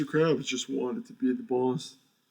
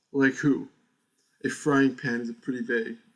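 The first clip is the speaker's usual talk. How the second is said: put-on storybook narrator voice. Voicing a line for a character during a game, speak in a narration voice. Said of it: "I'm doing my narration voice for him".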